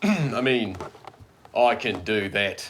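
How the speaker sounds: very loud, slow, awful fake British accent. Repeating a line in character for a Halloween party: terrible British accent. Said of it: "it was a terrible British accent".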